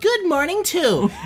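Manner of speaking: put-on high, girlish voice.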